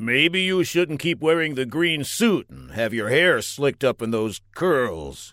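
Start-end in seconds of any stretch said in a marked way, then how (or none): none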